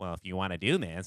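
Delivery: put-on nasal, nerdy voice. Show how you finally learned to do him, in a very nasally Michael Bloomberg voice. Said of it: "It's like just very nasally".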